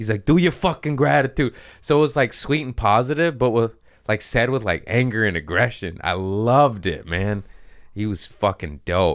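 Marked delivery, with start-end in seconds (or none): 0.2-1.5 put-on heavy, gruff New York accent, pitched up. Quoting what a man kept telling the speaker, thick New York accent. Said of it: "he had a thick New York accent".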